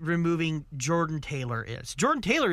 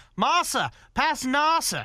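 very high, fake, put-on British accent; 9 semitones higher, 4 dB louder than usual. Joking about two racing drivers' names: mock British accent. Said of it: "with their British accents".

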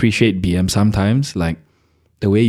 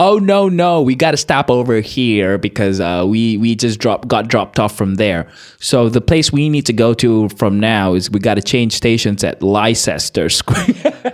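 put-on loud, obnoxious American voice; 3 semitones higher than usual. Retelling what a stranger on the tube said: imitating a loud obnoxious american. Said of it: "this American in the tube was really loud and obnoxious".

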